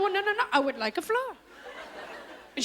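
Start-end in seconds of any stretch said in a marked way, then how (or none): 0.0-1.4 insistent, stress on floor, higher pitch. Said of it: "I go".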